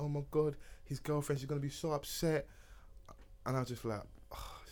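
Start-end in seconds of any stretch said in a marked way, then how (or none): 0.0-2.5 acted, sobbing, tearful crying through the words. Retelling what she said while crying in the bedroom: imitating someone crying. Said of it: "She's crying like".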